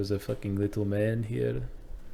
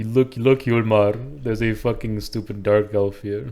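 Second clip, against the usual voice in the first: put-on Indian accent. A player speaks in character to Yulmar during a game: Indian accent. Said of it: "Why do you sound Indian?".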